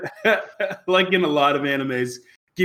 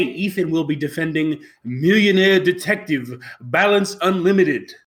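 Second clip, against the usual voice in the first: put-on mock Japanese accent. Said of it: "Is that your Japanese accent?".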